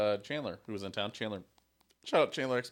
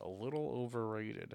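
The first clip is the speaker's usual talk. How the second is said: hushed, confiding, very quiet, under the breath; 9 dB quieter than usual. Ranking local restaurants, hoping a certain person can't hear: speaking very quietly. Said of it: "I'm going to say this very quietly".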